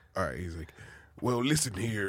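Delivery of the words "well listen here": over-the-top, big, put-on macho character voice. Showing the others a Macho Man Randy Savage voice. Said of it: "can you do Call Macho?".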